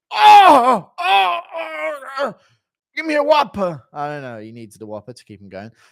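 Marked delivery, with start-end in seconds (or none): 0.1-3.8 shrill, booming, drawn-out wail, high, loud and slow. Ordering at a drive-through, imitating Daniel Cormier in heart failure. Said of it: "Impression of D C surviving heart failure at a drive-through".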